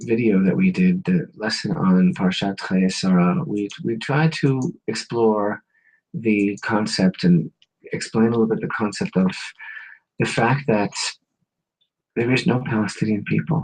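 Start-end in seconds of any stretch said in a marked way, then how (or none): 12.1-13.7 whispered, lower and quieter. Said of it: "I say that in a whisper".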